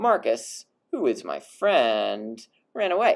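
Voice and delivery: "who is my friend" low, slow, set apart. Latin lesson, a relative clause as a digression: lower tone on who is my friend. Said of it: "you want to say it with a slightly lower tone of voice".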